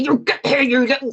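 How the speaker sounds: acted angry scolding tone. Showing how a voice sounds calling back a dog that has run off: angry mummy voice. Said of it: "that's an angry mummy voice".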